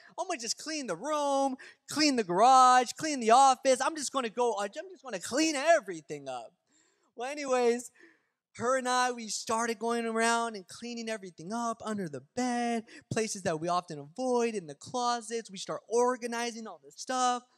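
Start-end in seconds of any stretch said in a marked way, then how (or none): 0.2-6.5 loud, high-pitched yelling. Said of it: "like, yell and you're like".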